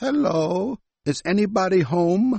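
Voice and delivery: put-on elderly man voice. In a listening exercise, someone opens a door and calls out, very old man voice. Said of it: "It sounds like an old man, a very old man".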